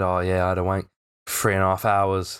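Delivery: smug, boastful, bragging, out to impress. Retelling a schoolmate's claim to impress friends: imitating a boastful friend. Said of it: "he said it in a way like we were supposed to be impressed".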